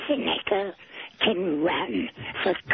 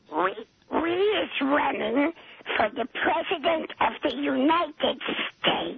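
high creature voice, half coughed out; 6 semitones higher than usual. Answering a host who asks who is on the line; Smeedle voice, cough-like. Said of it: "Are you talking or coughing?".

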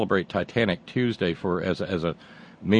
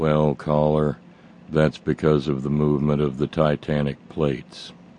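low, flat, deadpan monotone; 4 semitones lower than usual. Retelling his reply to a caller, in a magnificent monotone. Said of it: "in that magnificent monotone".

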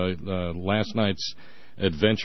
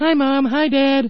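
put-on very high, loud, sweet little kid voice; 8 dB louder than usual. Describing the kids coming home from school, greeting the parents; sweet little voice. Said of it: "second sweet little voice".

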